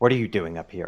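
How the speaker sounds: muttered hiss under the breath. A character confronts a man who gives no response, hissed under her breath. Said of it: "like hiss a little bit almost under her breath".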